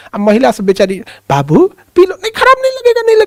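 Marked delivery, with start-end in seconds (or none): 1.2-3.2 mock-polite, civil tone, put-on polite woman voice. Retelling how a woman urges someone to drink polio drops, imitating a polite woman. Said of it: "थोड़ा वो सभ्य ढंग से बोलती हैं".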